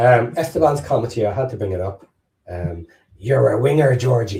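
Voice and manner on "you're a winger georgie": put-on fantasy giant character voice. Reading out a viewer comment: Hagrid voice from Harry Potter. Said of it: "In Hagrid's voice from Harry Potter".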